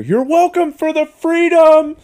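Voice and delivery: very loud, high-pitched, shrill scream. Retelling what the speaker yelled at her as she walked out the door, retelling a scream. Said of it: "I just screamed at her".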